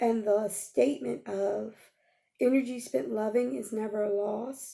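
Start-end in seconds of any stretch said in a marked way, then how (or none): none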